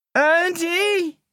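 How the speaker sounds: very high, long, drawn-out calling out. Narrator reading Terry as he searches for Andy; calling out. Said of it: "He called".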